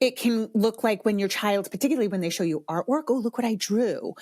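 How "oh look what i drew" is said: normal talking voice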